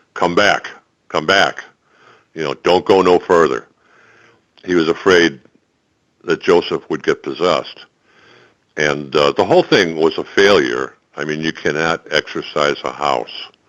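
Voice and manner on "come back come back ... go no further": barked out, commanding tone. Retelling how a man barked at a man in a trance: James Earl Jones voice, barking. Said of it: "in a very James Earl Jones voice and bark".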